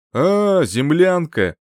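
scornful, contemptuous, lazy drawn-out drawl. The prince answers Maria, who has just introduced herself, with a contemptuous drawl. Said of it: "Презрительно протянул принц".

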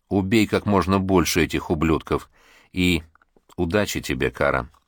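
ordinary delivery

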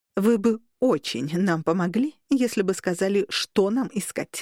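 ordinary delivery

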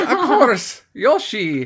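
high-pitched, swooping cartoon critter voice in Irish accent. Retelling what a priest said to them, in an Irish-accented Yoshi voice. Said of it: "he said it with a perfect Yoshi voice, but like Irish somehow".

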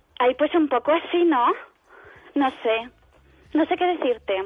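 dim, unfriendly, dismissive ditzy blonde voice. Asked to talk like a half-dumb blonde who dislikes everyone, the speaker plays along. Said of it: "medio tonta y no te cae bien nadie. ¿Cómo me hablarías?".

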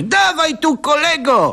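very high, loud shouted call. A woman calls down from above to someone below: shouting from above. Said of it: "Zakrzyknęła z góry".

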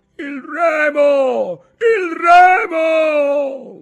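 very high, very loud bellow, "remo" stretched. Battered by waves in a rowing boat, a man cries out, shouting. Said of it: "gridò Ntoni".

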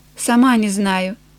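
ordinary delivery

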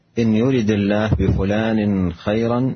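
ordinary delivery

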